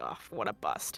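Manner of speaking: very quiet whispered mutter under the breath. A character walks out of the store and says this: muttered under breath. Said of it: "she kind of like mutters under her breath".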